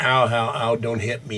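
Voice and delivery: ordinary talk, nothing marked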